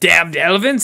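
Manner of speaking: put-on Cockney accent. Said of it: "This is actually a Cockney".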